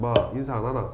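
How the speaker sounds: put-on Gyeongsang accent, leading "ma". Imitating a head coach asking why a rookie didn't greet: Gyeongsang accent. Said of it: "경상도 마가 들어갔잖아요".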